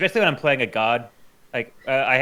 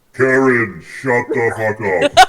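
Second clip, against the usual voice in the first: loud, godlike, big thundering booming voice; 8 dB louder than usual. Imagining how a figure would tell Karen off, in a big booming voice. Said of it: "He would have that big booming voice and be like".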